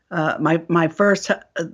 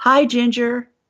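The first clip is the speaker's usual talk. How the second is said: put-on sweet, high small child's little girl voice; 7 semitones higher than usual. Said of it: "Sounds like a little girl says".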